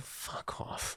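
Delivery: mock muttering under breath. Retelling own words on walking in: imitating own muttering under breath. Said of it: "under my breath".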